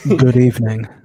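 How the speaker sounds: sexy, seductive, alluring voice. Asked on a stream to say hello in the sexiest way possible, sexy voice. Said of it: "say hello in the most sexy way possible".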